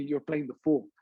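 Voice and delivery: ordinary talk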